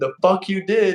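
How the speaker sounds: mock high, shrieking, screaming yell. Speaker retelling how a woman instantly started screaming, retelling a woman screaming. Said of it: "she instantly starts screaming".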